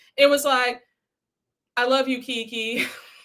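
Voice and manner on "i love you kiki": put-on weak, dry, flat, feelingless monotone. Mimicking someone's weak line delivery: weak, flat monotone. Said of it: "so weak ... can you put some sort of feeling behind it? ... this dry monotone".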